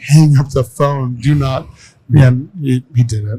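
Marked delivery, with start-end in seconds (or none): 0.0-1.7 urgent half-yell, mildly shouted. Retelling a phone call with a sales rep: imitating own screaming. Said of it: "And I'm on the phone screaming".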